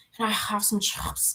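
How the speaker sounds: put-on breathy, hushed UK accent, out of breath. Mocking a type of UK accent the speaker hates, mock breathy UK accent. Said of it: "they're like breathing in and out".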